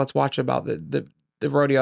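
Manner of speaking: ordinary delivery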